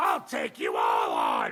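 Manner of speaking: deep, loud, menacing roar.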